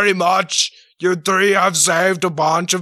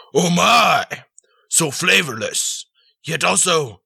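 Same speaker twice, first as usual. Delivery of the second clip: creaky, rough, pompous and grand regal voice. Narrating a role-play game, the Lord of Monkeys tastes the thrown potato: Lord of Monkeys voice. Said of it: "I am the lord of all monkeys, big and small".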